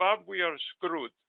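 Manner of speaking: put-on Polish-accented voice. Recalling his late mentor's reaction, the speaker quotes him: imitating mentor's polish accent. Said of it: "in his Polish accent".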